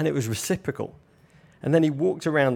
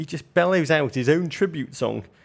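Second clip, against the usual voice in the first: ordinary talk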